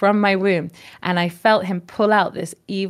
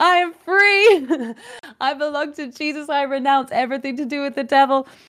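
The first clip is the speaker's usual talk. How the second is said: acted scream, higher; 7 semitones higher than usual. Retelling standing before a burning fire: retelling own screaming. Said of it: "I'm standing there screaming".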